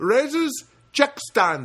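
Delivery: put-on Filipino accent. Retelling what a worker answered the speaker, Filipino accent. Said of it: "I don't know if that's a good Filipino accent".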